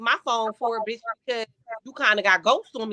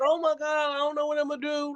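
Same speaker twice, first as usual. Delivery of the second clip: put-on, tearful, sobbing distress; 4 semitones higher, 4 dB quieter than usual. Acting out calling him about the car: mock crying. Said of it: "Ain't like I call him crying like".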